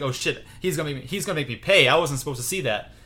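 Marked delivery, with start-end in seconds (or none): none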